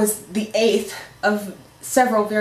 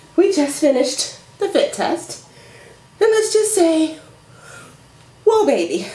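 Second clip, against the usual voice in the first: breathless, slightly wheezing, much higher, louder; 8 semitones higher, 4 dB louder than usual. Just after finishing a fit test, reporting on it: out of breath. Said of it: "I'm completely out of breath".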